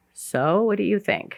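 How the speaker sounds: soft, shy, tentative, timid voice. Retelling how the sponsor asked a question, imitating a timid question. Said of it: "very, very timidly and she said".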